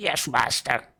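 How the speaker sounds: screechy, yowling small creature voice. Voicing a kobold answering its master: screechy kobold voice. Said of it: "The kobold gives you a screeched yowl".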